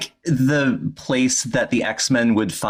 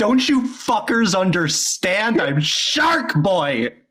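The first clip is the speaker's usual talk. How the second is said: acted-out screaming; 7 semitones higher than usual. Imagining someone that age walking down the street as Shark Boy, imitating someone screaming. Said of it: "walking down the street screaming".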